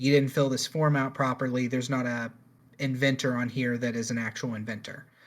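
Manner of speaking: normal talking voice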